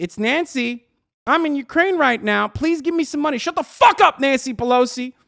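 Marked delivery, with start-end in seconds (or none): 0.0-3.4 put-on desperate pleading, much higher pitch. Mocking daily pleas for money, desperate begging as Nancy Pelosi. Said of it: "Every goddamn day I'm getting fucking blasted".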